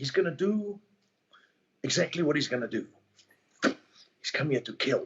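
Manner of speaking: slow, deliberate, measured movie-actor voice. Answering a request to do Christopher Walken: Christopher Walken impression. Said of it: "can you do that one?".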